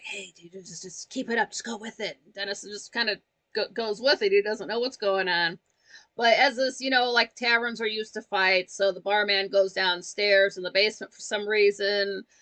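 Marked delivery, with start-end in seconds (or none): 0.0-2.2 very quiet, hushed, conspiratorial under-the-breath whisper. Retelling a staged fight, quoting a quiet aside: imitating a whisper. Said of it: "he starts whispering".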